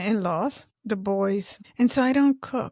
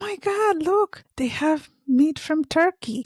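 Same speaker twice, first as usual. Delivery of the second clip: mock thrilled, high, super-excited overjoyed exclamation; 6 semitones higher than usual. Retelling how their aunt got super excited, imitating Cecilia's excited voice. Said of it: "Cecilia got super excited. She's like".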